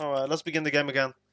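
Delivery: ordinary delivery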